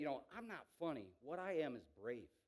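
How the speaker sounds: normal talking voice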